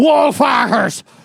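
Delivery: put-on, heavy, thick Scottish brogue. Imitating a radio ad announcer: imitating a thick scottish accent. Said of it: "with a thick Scottish accent".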